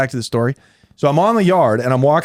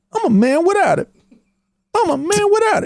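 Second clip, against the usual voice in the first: very high, nerdy, scary, threatening voice pitched way up. Teasing a friend who said a line like Craig from Friday; imitating Craig from Friday.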